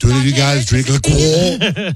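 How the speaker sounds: mock snooty French voice, high and slow.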